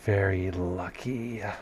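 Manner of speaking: rasping voice with a lisp. Voicing a partially reanimated head that chuckles and speaks: raspy lisp. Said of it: "a raspy lisp".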